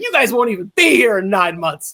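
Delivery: put-on furious, mad, fuming voice. Imitating the team owner scolding the staff: imitating an angry team owner. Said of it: "he just is so mad".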